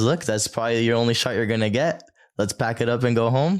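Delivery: normal talking voice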